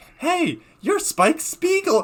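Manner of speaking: put-on very high, loud, hyperactive little girl voice. Retelling a scene where a hyperactive girl finds someone: imitating a hyperactive girl. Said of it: "In this exact voice".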